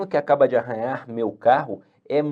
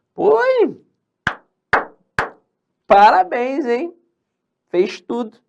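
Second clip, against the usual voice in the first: heavy irony in a very high, loud voice; 13 semitones higher, 7 dB louder than usual. Showing a reaction to a student with no homework: ironic tone. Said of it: "Isso é ser irônico".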